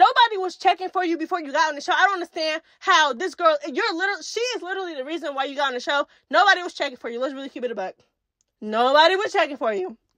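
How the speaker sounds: heated, rapid-fire, angry fast rant. Speaker calling out someone from the show, getting mad and talking fast. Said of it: "I'm getting mad because I'm talking fast".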